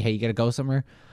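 normal talking voice

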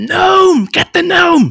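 very loud, high, shrill, drawn-out shriek. Game master voicing a human woman spotting the gnome, screaming. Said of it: "she locks eyes with you and she screams".

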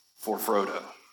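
put-on hushed half-whisper. Quoting a movie line at the walls of Mordor: half-whispering as Aragorn. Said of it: "he whispers".

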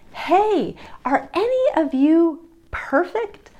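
play-acted, slow, high, drawn-out called-out yell. Retelling calling out to a group of small children: retelling own yell. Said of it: "I yelled out".

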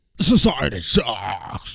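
loud, slow mock protest chant. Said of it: "They're like".

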